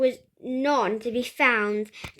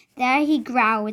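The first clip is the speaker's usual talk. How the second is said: plain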